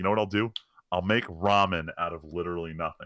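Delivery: ordinary talk, nothing marked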